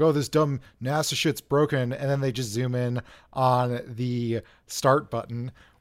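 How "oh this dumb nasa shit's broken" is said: smug, put-on voice. Retelling a documentary scene, imitating Mark Sargent: smug Mark Sargent impression. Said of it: "Mark Sargent is sitting there kind of smugly".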